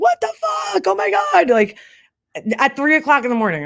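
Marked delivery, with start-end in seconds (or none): 0.0-1.5 acted-out very high, swooping screaming outburst. Retelling an animal jumping at the speaker on the porch at 3 a.m.: retelling own screaming. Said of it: "and I'm screaming now at this point".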